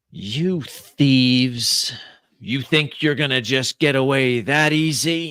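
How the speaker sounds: metallic, echoing voice, easy and drawn out. Narrating a scene: a voice in a large vault confronts the thieves, metallic echoing voice. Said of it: "a metallic voice echoes through this large cavern".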